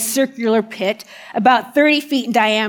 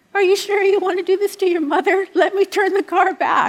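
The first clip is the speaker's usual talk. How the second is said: put-on high, trembling, quavering old-woman voice; 8 semitones higher than usual. Retelling what the grandmother used to say during the trip, imitating her quivering voice. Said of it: "in her quivering voice".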